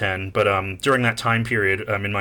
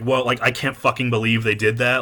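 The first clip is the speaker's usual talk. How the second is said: normal talking voice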